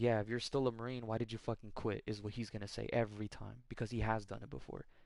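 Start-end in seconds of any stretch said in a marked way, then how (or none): 0.0-2.0 put-on scoffing tone. Retelling what his dad says every time, imitating his dad scoffing. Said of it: "My dad scoffs at the idea".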